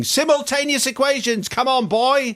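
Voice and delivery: mock shrill, high, stretched-out, drawn-out shouting. Retelling a maths lesson with a teacher from the eighties, imitating Missus C shouting.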